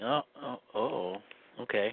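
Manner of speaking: taken-aback murmur.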